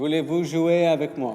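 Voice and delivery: French with English accent. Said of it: "prononcé avec un accent anglais".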